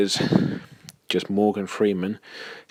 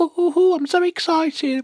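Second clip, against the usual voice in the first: squeaky, pitched up very high. Imitating how the Sugar Plum Fairy talks, in a Sugar Plum Fairy impression. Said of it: "She talks with a very, very, very high pitched voice, like".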